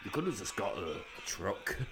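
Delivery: cool, very soft, quiet offhand throwaway tone. Imagining a wrestler's reaction to a small hammer: cool Kevin Nash voice. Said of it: "I'm trying to do the cool Kevin Nash voice".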